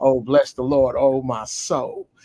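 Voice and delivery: drawn-out, slow, pious, sweet flirting tone. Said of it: "that's how they flirt".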